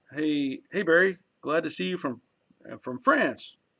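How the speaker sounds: ordinary talk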